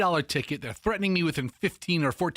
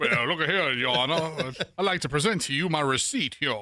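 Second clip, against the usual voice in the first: cartoon rooster character voice. Acting out addressing the judge over a parking ticket: Foghorn Leghorn voice. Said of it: "a combination of Foghorn Leghorn and Cajun Fester".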